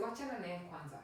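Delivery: ordinary delivery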